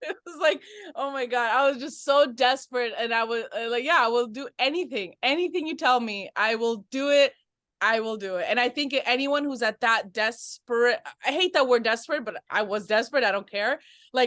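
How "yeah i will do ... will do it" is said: usual speaking voice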